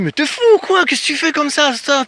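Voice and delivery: high-pitched Paris cité accent.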